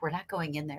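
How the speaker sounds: very quiet, hushed, barely audible half-whisper. Retelling what the woman sharing her mattress half-whispered after a kitchen noise: half-whispering. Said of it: "She's like whispered to me".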